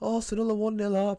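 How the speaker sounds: mock screaming, high-pitched, very loud. Retelling what dad screams downstairs during the match: imitating someone screaming. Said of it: "I can hear him screaming downstairs going".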